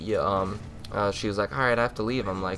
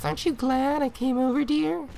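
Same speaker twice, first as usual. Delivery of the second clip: put-on girly voice, pitched very high. Mimicking someone who came over during gaming, in a put-on girly voice. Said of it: "in that girly voice".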